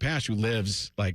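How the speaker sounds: ordinary delivery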